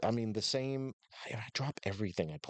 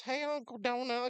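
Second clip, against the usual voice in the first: cute, very high-pitched voice; 14 semitones higher than usual. Retelling a phone call with a little niece: imitating the niece's voice. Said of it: "The voice".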